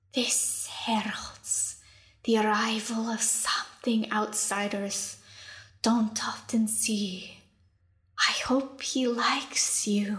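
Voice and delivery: slow, drawn-out, hissing reptilian lizard voice. The lizard leader speaks; slow, hissing voice. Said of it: "said in a slow, hissing common".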